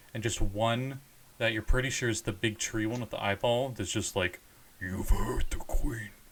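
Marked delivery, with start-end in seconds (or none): 4.8-6.1 demonic voice with a dark undertone. Voicing a big tree creature with an eyeball: demon backdrop voice. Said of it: "that demon backdrop to it".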